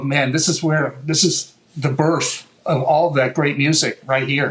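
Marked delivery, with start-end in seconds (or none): none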